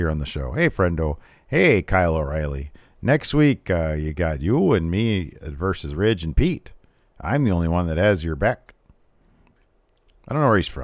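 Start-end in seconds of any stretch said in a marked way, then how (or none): 0.5-8.7 slow, deliberate, drawn-out wrestling-promo voice. Retelling a wrestler's backstage lines: imitating Von Wagner like Patrick Sparks. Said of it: "he kinda talks like the B-Man, Patrick Sparks".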